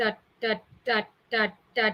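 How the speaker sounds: slow, lifeless, flat, dull robotic voice. Speaker demonstrates to an audience how robots speak, robot voice. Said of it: "That's how the robots will speak".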